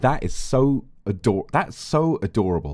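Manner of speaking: ordinary delivery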